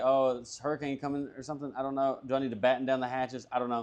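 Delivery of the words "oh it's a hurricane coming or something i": ordinary delivery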